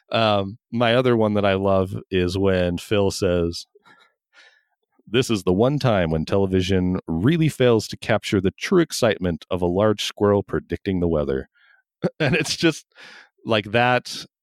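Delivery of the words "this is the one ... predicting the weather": ordinary delivery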